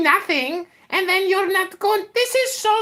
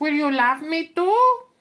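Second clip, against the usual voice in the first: put-on Indian accent, lower pitch; 4 semitones lower than usual. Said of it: "the Indian accent is just hilarious".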